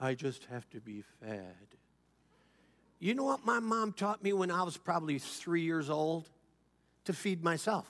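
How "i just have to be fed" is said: put-on very low, hushed, holier-than-thou murmur. Mocking people who leave for another church, the speaker imitates them in a mock-pious tone. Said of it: "They always say it in such a pious tone".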